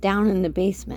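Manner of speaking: ordinary delivery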